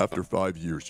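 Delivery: very low, deep voice. Quoting Pirate Software's response in a lowered Pirate Software voice. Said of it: "let me lower my voice to sound like Pirate Software".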